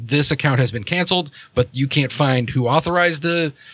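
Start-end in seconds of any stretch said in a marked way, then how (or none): none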